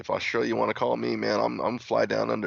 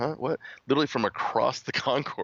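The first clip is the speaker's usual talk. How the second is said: normal talking voice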